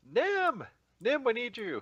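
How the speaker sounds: very high, loud, urgent yell. In a game, a character runs out the front and yells to a companion for help. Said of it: "runs out the front and yells".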